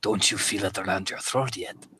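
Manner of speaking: low, creepy, menacing, threatening whisper. Voicing a character who leans in during a grapple: whispering menacingly. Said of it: "she leans in and whispers".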